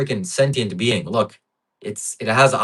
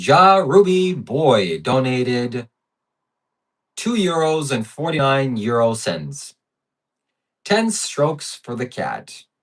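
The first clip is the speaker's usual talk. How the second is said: ai robot voice; 3 semitones higher than usual. Reading out a viewer's donation while Streamlabs fails, in an AI robot voice. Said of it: "I'm gonna pretend to be the A I robot".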